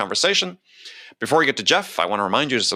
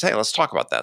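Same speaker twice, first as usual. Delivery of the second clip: plain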